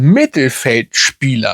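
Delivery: Mittelfeldspieler stressed, drawn out slow and wide.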